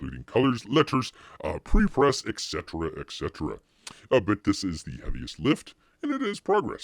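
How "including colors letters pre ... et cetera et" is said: ordinary delivery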